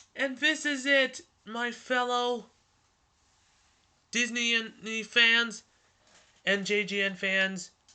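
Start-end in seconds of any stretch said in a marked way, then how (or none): 0.2-1.2 loud, high-pitched yelling. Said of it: "I'm yelling so much".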